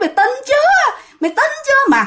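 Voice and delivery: mock, very high, jeering talk through laughter. Retelling women who dragged someone off while laughing, imitating their mocking, laughing voice. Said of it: "cái giọng giễu cợt mà vừa cười cợt mà vừa nói".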